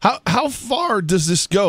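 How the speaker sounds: voice breaking, swooping. Asking a guest an excited question about the book: voice cracking. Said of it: "my voice cracked right there".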